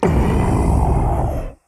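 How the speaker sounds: icy, piercing whispered voice.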